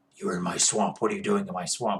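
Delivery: very low, harsh growl kept rough throughout. A speaker shows how his current character first sounded, in a Batman voice. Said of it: "at first it was a little bit Batman".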